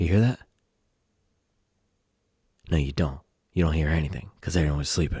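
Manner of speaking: speaking quietly in a hushed voice. Talking early in the morning while everyone sleeps: speaking quietly. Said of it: "I'm quiet because everybody's sleeping".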